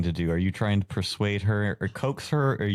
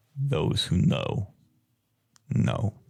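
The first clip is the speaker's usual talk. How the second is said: voice dropped way down, much deeper. Game master voicing a woman ushering the players out, in a much deeper voice. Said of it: "In a much deeper voice".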